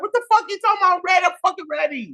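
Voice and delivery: very high-pitched, outraged, furious voice. Retelling a reaction to being told not ready: imitating own furious reply. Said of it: "I was so fucking mad".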